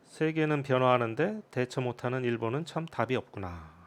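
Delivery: ordinary delivery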